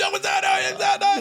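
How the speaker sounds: put-on yell. Recounting a run-in with a guy by a car, retelling a yelled protest. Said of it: "And he's yelling".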